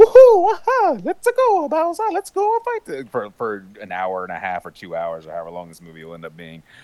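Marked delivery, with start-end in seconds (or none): 0.0-3.1 put-on very high and loud voice with Italian accent. Imitating the classic game voice of Mario: Charles Martinet's high-pitched Italian Mario voice. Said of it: "Charles Martinet going".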